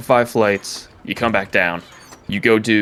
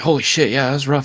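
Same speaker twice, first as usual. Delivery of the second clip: acted breathlessness, higher; 5 semitones higher than usual. Retelling a timed challenge, the speaker quotes the man coming down, imitating being out of breath. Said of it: "He's like out of breath".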